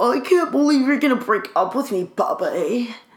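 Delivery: constipated-sounding, strained voice acting cool. Imitating the coworker during a breakup: impression of a coworker. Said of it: "That was good, right?".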